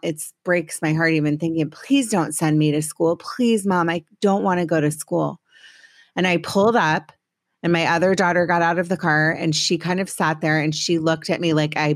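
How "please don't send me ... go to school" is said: put-on sobbing, crying voice. Retelling a child's plea not to be sent to school: imitating a sobbing plea. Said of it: "she was hysterically sobbing".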